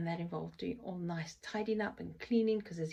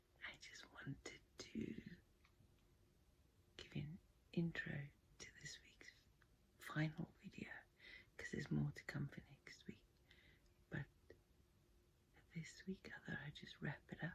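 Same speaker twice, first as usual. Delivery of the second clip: much quieter, soft hushed voice; 3 semitones lower, 13 dB quieter than usual. Introducing this week's final video to viewers: speaking softly. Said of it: "I apologize for speaking so softly".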